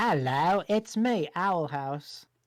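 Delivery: loud, amateur put-on British accent. Teasing someone about accents, speaker tries one: attempted British accent. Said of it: "I think British would say more owl ouse".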